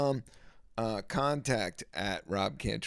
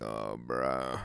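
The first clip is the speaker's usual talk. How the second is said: gravelly put-on voice, much lower pitch; 10 semitones lower than usual. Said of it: "But now I got that gravelly".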